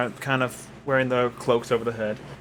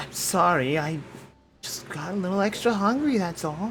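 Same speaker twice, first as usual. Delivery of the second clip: unexpectedly soft, high-toned voice; 7 semitones higher than usual. Game player voicing a beast speaking to its companions, in a surprisingly soft voice. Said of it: "speak in a surprisingly soft toned voice".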